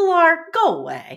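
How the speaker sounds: play-acted, very loud, high, dismissive brush-off tone. Speaker retells a man brushing off a woman filming him, mock-dismissive. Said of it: "he says so dismissively".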